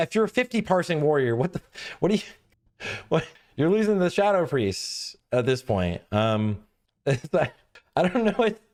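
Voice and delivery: words broken up by laughing. Ranking game classes, laughing while talking. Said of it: "I'm sorry for laughing".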